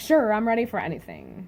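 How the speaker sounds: ordinary talk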